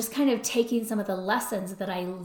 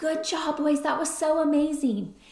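mock thrilled, excited, high-pitched cheering yell; 7 semitones higher than usual. Recalling cheering from the sideline for the players, retelling an excited yell. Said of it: "i was yelling like".

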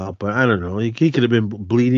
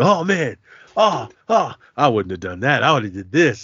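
imitated chatty, talkative voice. Retelling a friend's brother talking through the movie, imitating a chatty moviegoer. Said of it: "He would not shut up the whole movie".

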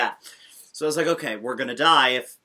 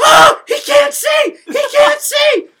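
shrill, panicked, very high and very loud screaming; 14 dB louder than usual. Telling a story about a bus driver who can't see, imitating people screaming.

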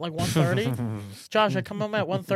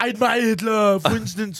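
loud, dumb-sounding, dopey put-on tough-guy voice; 3 semitones higher, 6 dB louder than usual. Reading a quote the way he would say it, in a Schwarzenegger impression. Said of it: "if you read it in Schwarzenegger's voice, it's a little better. Because he's like, he sounds dumb. He goes".

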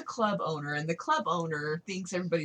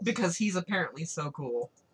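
plain

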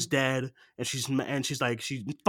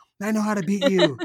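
high, mild mock yell, sketched in; 5 semitones higher than usual. Retelling a movie scene where a character yells at a box: imitating someone screaming. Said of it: "screaming at a box".

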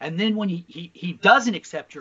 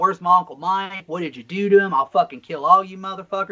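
put-on frantic, freaking-out outburst; 3 semitones higher than usual. Retelling what he yelled in the hospital: imitating someone freaking out. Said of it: "he's freaking out".

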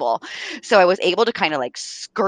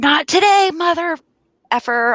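play-acted, very high, full-on yelling shriek; 10 semitones higher than usual. Retelling being thrown to the ground by an attacker, reenacting a yell. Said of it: "I just yelled".

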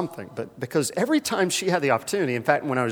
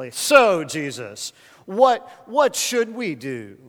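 slow, dry, half-mocking, faintly sarcastic tone; 3 semitones higher, 4 dB louder than usual. Retelling the crowd's question to jesus, imitating a sarcastic crowd. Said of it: "almost sarcastically".

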